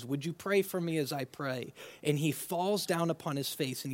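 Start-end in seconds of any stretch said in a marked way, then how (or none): 0.0-1.7 earnest, imploring pleading voice. Retelling a request to the disciples: acting out a plea. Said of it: "he's pleading with his disciples".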